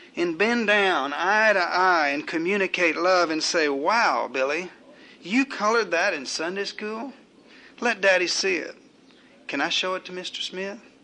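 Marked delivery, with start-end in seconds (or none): none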